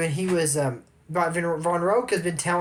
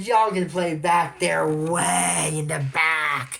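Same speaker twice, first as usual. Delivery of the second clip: put-on villain voice, slow, unhurried and drawn out. Retelling what a woman said to the group, the speaker quotes her in a villain voice. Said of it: "That's a villain voice".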